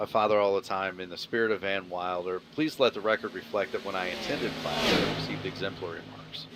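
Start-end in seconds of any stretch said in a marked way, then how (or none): none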